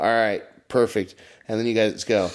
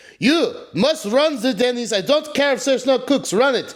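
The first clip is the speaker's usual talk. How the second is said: put-on speaking with Armenian accent; 14 semitones higher than usual. Describing the Denny's owner ordering the manager around, Armenian accent as the owner. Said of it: "That was my best Armenian".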